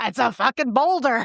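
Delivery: put-on New York Bronx accent. Quoting a film character who slips out of his cultivated voice: bronx accent. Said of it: "he's like a guy from the Bronx".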